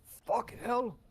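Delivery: very high, full-throated, top-of-the-lungs yell. Playing a dwarf who just stepped in radioactive goo: yelling at the top of voice. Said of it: "at basically the top of my voice".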